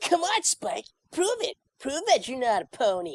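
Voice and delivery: put-on very high, young voice with swooping, swinging pitch. Showing the voice used when auditioning for a bad dragon: young Garble voice. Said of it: "my voice was like this".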